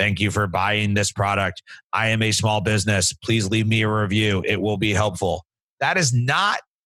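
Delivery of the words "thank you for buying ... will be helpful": flat, mechanical, monotone robot-like voice. Showing how not to thank a buyer, in a robotic voice. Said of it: "Don't come at me with a robotic voice".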